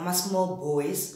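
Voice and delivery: normal talking voice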